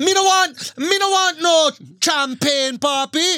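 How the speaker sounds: put-on Jamaican accent. Trying again after being told it sounds too irish, a put-on jamaican accent. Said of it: "You sound like Champagne McGregor".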